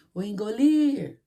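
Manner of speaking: called out from afar, long final lir of engolir. Portuguese stress lesson, calling a word from afar: calling engolir, stretching lir. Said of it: "Viu que a tia falou lir mais? Demorou mais nessa sílaba?".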